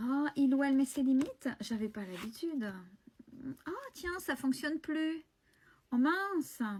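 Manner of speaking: sarcastic, swooping sing-song delivery. Acting out how the person facing reacts to new limits: sarcastic imitation. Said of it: "je suis, euh, sarcastique ce soir".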